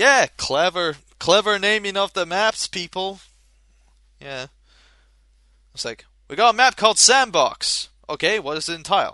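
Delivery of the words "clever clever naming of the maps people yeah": ironic, sarcastic tone meaning the opposite. Talking about how the maps were named, sarcastic. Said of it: "and I'm only being sarcastic here".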